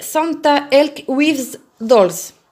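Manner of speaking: clumsy, laid-on English accent, slow. A speaker names a pre-printed fabric, in an english accent. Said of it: "Avec mon super accent anglais".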